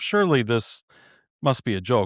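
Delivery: dry, lightly sarcastic, needling tone. Recalling a comment once left on a church video: retelling own sarcastic comment. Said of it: "I was a little sarcastic".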